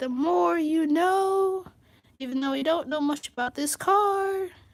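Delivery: voice cracking. Talking through the features of a car, voice cracking. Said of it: "As my voice is cracking to death".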